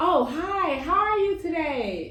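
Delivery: fake-friendly, high, slow, polite customer-service voice. Showing how to greet people without telling them the truth: customer service voice. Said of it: "give them the customer service voice".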